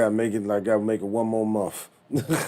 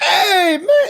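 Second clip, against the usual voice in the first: put-on loud, high-pitched drunken holler; 10 dB louder than usual. Showing how a drunk act sounds: drunk Richard Pryor voice. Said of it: "he sounds like drunk Richard Pryor".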